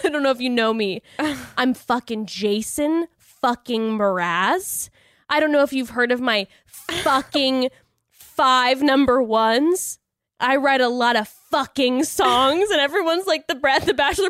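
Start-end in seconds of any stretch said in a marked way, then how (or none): 0.0-12.7 sudden, slow, drawn-out mock evil, intimidating menace. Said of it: "super evil and intimidating all of a sudden".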